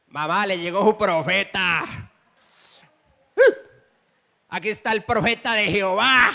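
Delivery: loud, taunting, scornful, mocking delivery. Telling a true story, quoting the drunk son to his mother: retelling a mocking tone. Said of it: "Lo hacía en tono de burla".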